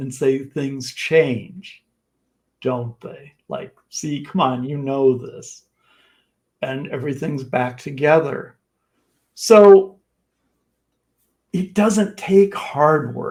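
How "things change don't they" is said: soft, gentle, coaxing tone with a smile. Showing a second way to say the same phrase, soft and smiling. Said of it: "softening my face and giving a little kiss, a smile".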